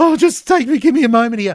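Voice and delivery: mock crying, high voice breaking down in tears. Describing men watching a show with family, imitating men breaking down crying. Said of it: "the men who are breaking down like me and crying".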